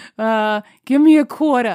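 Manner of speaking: put-on northern US accent. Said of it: "with the Yankee accent".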